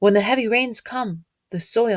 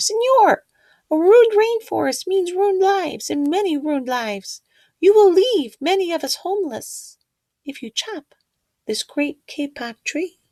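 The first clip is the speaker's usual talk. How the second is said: piping, squeaky, high little tree frog voice; 9 semitones higher than usual. Reading a story aloud, a small tree frog speaks into a man's ear: squeaky tree frog voice. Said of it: "In a squeaky voice".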